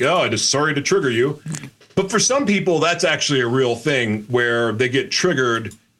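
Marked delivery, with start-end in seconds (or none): none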